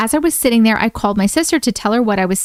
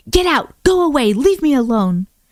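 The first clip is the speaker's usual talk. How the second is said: mock, very angry, commanding old man voice; 3 semitones higher than usual. Retelling what an angry old man spirit said: imitating an angry voice. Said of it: "he said very angrily".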